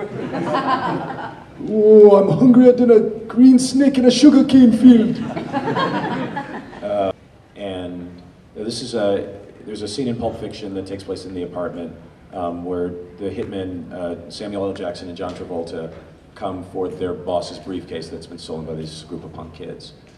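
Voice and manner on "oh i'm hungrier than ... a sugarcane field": very high, loud, slow, belted cartoonish Jamaican accent. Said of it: "it's a cartoonish Jamaican accent".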